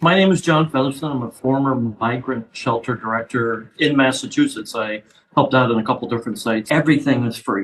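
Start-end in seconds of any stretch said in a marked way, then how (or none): 6.7-7.6 every word punched, pitch falling to the end. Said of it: "I cannot stress the word everything".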